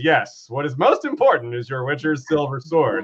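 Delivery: mock, very sarcastic, swooping sing-song. Retelling a scene from a book: imitating a sarcastic remark. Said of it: "Belrad very sarcastically says".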